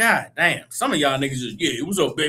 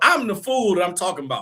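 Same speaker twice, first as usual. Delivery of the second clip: ordinary talk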